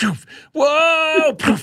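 panicked, high, loud cartoon yelping voice. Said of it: "We're like George Jetson going".

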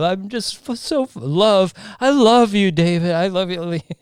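mock gushing, lovestruck. Recalling a man who was all about love, imitating his gushing. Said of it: "he was all about love".

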